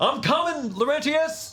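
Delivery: put-on very high country-accent holler. A character charging through the halls with a knife, yelling in a country voice. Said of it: "It's hard to yell in the country voice".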